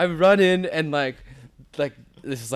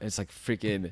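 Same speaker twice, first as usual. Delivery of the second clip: usual speaking voice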